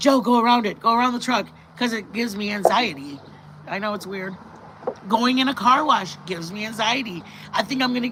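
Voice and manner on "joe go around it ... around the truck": ordinary delivery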